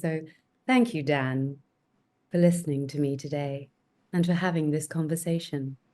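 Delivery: low, deep put-on voice pitched way down. Asked to do a female character's voice, the speaker finds it: low character voice. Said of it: "she speaks down here. I have to find her voice".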